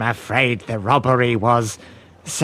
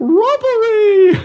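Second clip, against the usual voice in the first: shrill, loud, piercing high-pitched yell; 6 dB louder than usual. Vander clears his throat, then calls out one word, yelling. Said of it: "And then yells".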